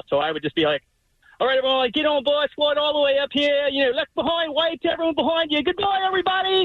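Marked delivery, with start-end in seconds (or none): 1.4-6.7 put-on Australian accent, pitched up. Recalling greeting riders boarding his Jungle Cruise boat, in an Australian accent. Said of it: "I would just start an Australian accent".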